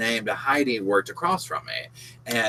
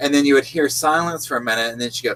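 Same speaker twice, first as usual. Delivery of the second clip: normal talking voice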